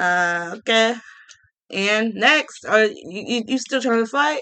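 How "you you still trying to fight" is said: ordinary talk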